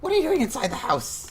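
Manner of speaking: very high, very loud, startled shrill hiss. Startled to find someone inside the house, she hisses in a shrill voice. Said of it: "she she hisses at you in, in a shrill voice".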